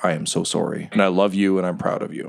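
put-on tearful weeping. Retelling a man's apology to you, said into your ear: imitating someone weeping. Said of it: "and he's weeping".

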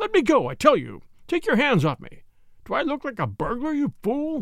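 frantic, gasping, trembling, desperate high voice. A murderer being handcuffed by a detective, desperate.

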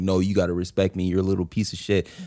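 low, fast authoritarian dad voice. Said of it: "Yeah, no, you crushed it".

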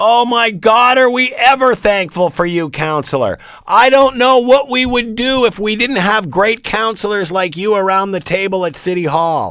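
heavy sarcastic gushing. Reacting to a quoted councillor's boast about defying opinion: heavy sarcasm. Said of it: "your always well-timed sarcasm".

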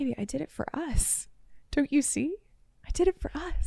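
calm, easy, soft tone. Retelling a boyfriend's excuse after being called out: imitating a calm boyfriend. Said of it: "he was so calm and he'd be like".

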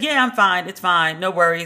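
ordinary talk

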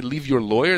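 ordinary talk

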